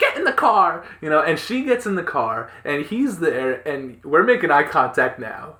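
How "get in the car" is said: mock loud, high-pitched yelling. Retelling what a woman yelled at a man by the car, imitating a woman yelling. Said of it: "she's just yelling at him".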